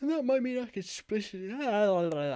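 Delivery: speaking through a yawn. Closing out a play session, talking to listeners while yawning. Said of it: "Sorry, I'm yawning".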